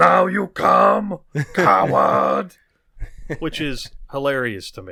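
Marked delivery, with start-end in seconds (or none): 0.0-2.6 very drawn-out, rough-edged, loud, mocking tone. Retelling a film scene where Sato thinks Miyagi comes to kill him: imitating Sato. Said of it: "He's like".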